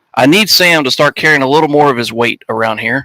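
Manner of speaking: normal talking voice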